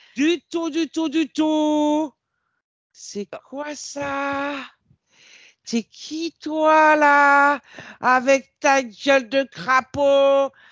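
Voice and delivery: very high, slow, furious, confrontational tone.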